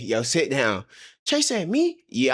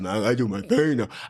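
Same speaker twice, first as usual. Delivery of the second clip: put-on deep voice, lower pitch; 9 semitones lower than usual. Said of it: "he got a deep voice".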